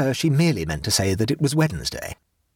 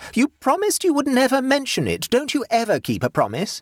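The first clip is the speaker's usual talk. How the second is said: loud, very high, blaring megaphone-style call; 10 semitones higher than usual. Narrator reads a woman calling back to the narrator, megaphoning back loudly. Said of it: "She megaphoned back".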